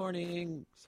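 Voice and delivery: very high voice, breaking and cracking. A radio host opens the morning show, voice cracking. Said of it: "voice crack".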